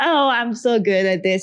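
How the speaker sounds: ordinary delivery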